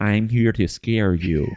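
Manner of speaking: mechanical, robot-like creature voice. Giving voice to the spider being discussed, in a robot spider voice. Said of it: "Why did it sound like a robot spider?".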